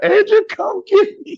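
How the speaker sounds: put-on near-tearful begging, pitched way up. Retelling calling from a payphone for a ride: retelling a near-tearful plea. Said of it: "and I'm about to cry".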